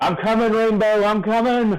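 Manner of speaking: very high, shrill, calling yell. Dashing toward a doorway in a game, calling to Rainbow: yelling in character. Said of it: "And I'm yelling".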